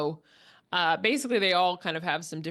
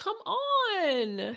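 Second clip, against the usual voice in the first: temper tantrum with voice pitched up; 12 semitones higher than usual. Retelling a movie scene where a woman storms out, Jane Fonda impression. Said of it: "that's a pretty good uh, uh, uh, impress, impression of, of uh, Jane Fonda doing that little speech".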